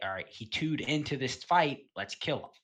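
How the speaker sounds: usual speaking voice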